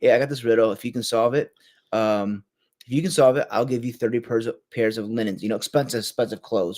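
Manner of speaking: ordinary talk, nothing marked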